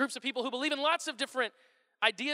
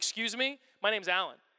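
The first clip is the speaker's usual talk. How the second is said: mock offended, irritated, angry, indignant tone; 4 semitones lower than usual. Retelling a young man's reply to being called the wrong name: imitating someone angry. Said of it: "he got really angry".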